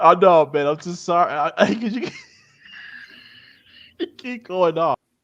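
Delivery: high, giggling, laughing voice.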